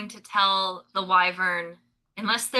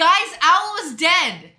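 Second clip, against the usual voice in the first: loud, high, drawn-out, swooping shout; 8 semitones higher, 7 dB louder than usual. Calling out to the party in character, in-character yell. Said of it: "I yell".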